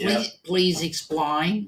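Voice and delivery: put-on Australian accent with politician's delivery. Replying to the other speaker, in a Pauline Hanson impression. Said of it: "You've got to have the right accent to say that".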